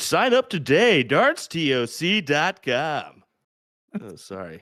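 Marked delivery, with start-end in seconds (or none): 0.0-3.2 very slow, drawn-out announcer voice, pitched up. Mid darts commentary, a commentator briefly switches into an announcer voice. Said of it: "That was a great announcer voice".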